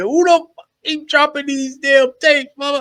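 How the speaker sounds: screamed, very high-pitched outburst. Picturing someone alone in the dark at home: imitating Thug screaming. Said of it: "Just screaming".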